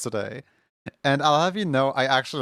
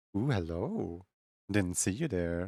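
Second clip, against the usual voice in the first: teasing, flirtatious, suggestive tone; 5 semitones lower, 10 dB quieter than usual. Reading a message aloud, instinctively, in a suggestive voice. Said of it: "in such a like suggestive voice".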